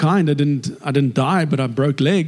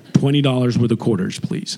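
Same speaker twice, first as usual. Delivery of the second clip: put-on American accent, much lower; 4 semitones lower than usual. Retelling asking a guy for quarters, switching into an American accent. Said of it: "I flip into an American accent".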